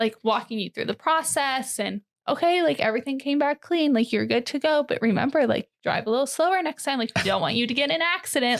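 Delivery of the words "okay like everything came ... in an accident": mocking, syrupy, super-sweet, condescending tone. Retelling being stopped for speeding, imitating a condescendingly sweet tone. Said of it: "almost condescendingly sweet".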